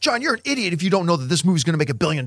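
scornful, heated, mild half-shouted yell. Speaker recalls people screaming at him before a movie came out; imitating someone screaming. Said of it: "screaming at me".

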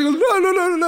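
high, loud, improvised reindeer noises.

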